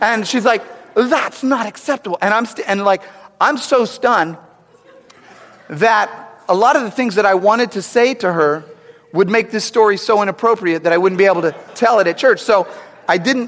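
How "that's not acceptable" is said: high-pitched yell-whisper, yelling and whispering at once. Retelling a stranger in a movie theater scolding: imitating a yell-whisper. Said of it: "the sound that you make when you're yelling and whispering at the same time".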